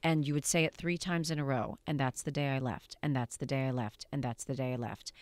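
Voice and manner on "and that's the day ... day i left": level flat monotone, identical each time, no inflection. Demonstrating an acting exercise, saying the last line three times in a row; no inflection. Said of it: "you would say that line with no inflection".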